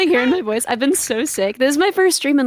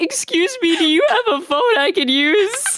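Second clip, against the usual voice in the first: put-on voice of a thirteen-year-old boy, pitched high; 5 semitones higher than usual. Retelling a friend's joke about sounding like a thirteen-year-old boy: imitating a thirteen-year-old boy. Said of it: "a thirteen-year-old boy who missed his bus".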